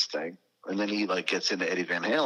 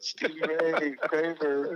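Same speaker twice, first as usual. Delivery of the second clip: mock crying, higher; 10 semitones higher than usual. Retelling how someone sat crying over a traded guitar: imitating someone crying. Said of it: "I'll just be sitting there crying".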